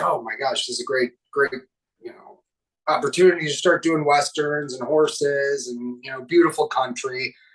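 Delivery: ordinary talk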